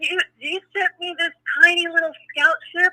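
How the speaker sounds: play-acted hollering outburst. Driving under the bridge looking up at a spaceship, retelling yelling at a spaceship. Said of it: "I was screaming at this thing".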